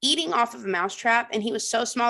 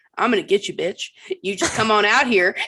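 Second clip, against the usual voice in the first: put-on trash-talking, taunting tone; 5 dB louder than usual. Retelling how he talked trash to the mouse, imitating trash talk. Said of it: "talking trash to the mouse".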